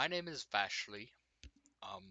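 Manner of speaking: soft, halting, unsure, hesitant voice. An old lady has just been asked her name; she answers, kind of hesitant. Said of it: "she kind of like hesitantly".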